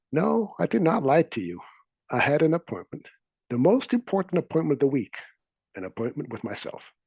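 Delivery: mock composed, very calm and even. Retelling a reply to someone who accused him of lying, retelling a calm reply. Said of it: "very calmly replied".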